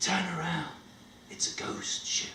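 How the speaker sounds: faint, very hushed whispered voice. Retelling a voice whispering a warning in the captain's ear: imitating a whispering voice. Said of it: "And I heard the voice".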